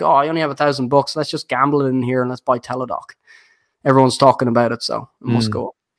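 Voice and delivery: ordinary delivery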